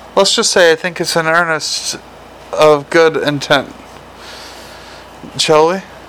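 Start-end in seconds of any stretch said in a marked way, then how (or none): none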